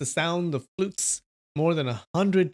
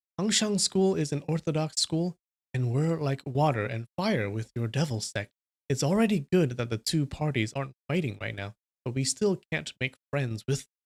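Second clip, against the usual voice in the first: ordinary delivery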